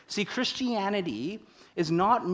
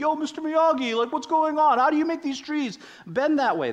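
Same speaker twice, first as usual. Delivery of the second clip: put-on pitched-up Brooklyn accent; 8 semitones higher, 4 dB louder than usual. Retelling Daniel questioning Mr. Miyagi: Daniel in Brooklyn accent. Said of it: "That's my, like, Brooklyn accent there".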